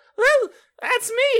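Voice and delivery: loud, very high-pitched cartoon voice. Retelling a sleepy companion's line: Mickey Mouse voice. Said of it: "He sounds like Mickey Mouse".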